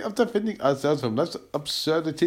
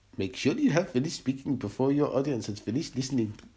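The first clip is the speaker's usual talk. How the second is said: generic, put-on South African accent; 3 semitones lower, 4 dB quieter than usual. Trying out accents, the speaker delivers a line in a south african accent. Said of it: "That was South African".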